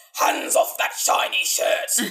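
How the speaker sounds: very loud, booming movie-character voice. Speaker quotes a character's line she and her sister always repeat, imitating a character's line. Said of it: "He's like".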